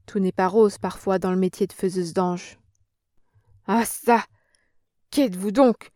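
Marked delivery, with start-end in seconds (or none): 3.6-5.7 terrified, choked stammer, slower. In a story read aloud, a woman facing Germaine stammers, choked with terror. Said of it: "balbutia d'une voix étranglée par l'épouvante".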